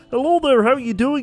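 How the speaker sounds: pleasant, harmless voice. Acting out how a person would sound greeting someone, innocuous friendly tone. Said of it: "kind of innocuous and kind of friendly".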